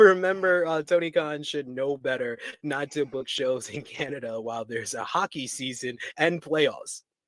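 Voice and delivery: ordinary talk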